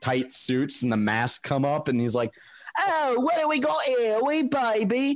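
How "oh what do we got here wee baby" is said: very high, fake posh upper-class British accent. Retelling what a masked man said on approaching: american's cockney take on posh british. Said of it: "an American doing a Cockney version of an attempt at a high-class British accent".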